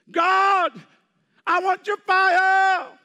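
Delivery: desperate cry, very loud and very high. Speaker recounting how, desperate, he shouted again to god: retelling a desperate shout. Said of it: "I shouted again".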